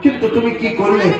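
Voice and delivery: tearful, pleading tone.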